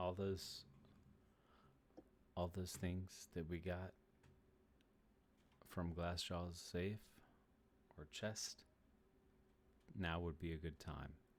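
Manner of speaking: very quiet in-character whispered aside. Whispering to a companion during a game scene: whispering in character. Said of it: "I'm whispering to Buck".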